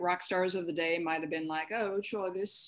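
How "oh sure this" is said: put-on English accent, casual and offhand. Imagining how rock stars of the day might have reacted, in an english accent. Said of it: "I like your English accent there".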